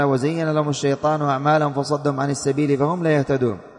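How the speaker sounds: ordinary talk, nothing marked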